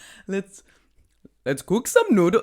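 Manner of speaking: loud, sing-song, put-on Indian accent. Improvising an accent on the spot that the other speaker hears as indian. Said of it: "No, it's Indian".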